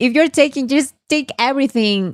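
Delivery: high, sarcastic jab. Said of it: "She's now being sarcastic".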